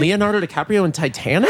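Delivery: ordinary talk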